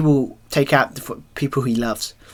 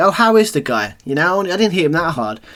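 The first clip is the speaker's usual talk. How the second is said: very sarcastic, lilting tone, pitched up; 5 semitones higher, 3 dB louder than usual. Retell how a man came in backstage and spoke to Ricochet, mock-sarcastic, retelling his words.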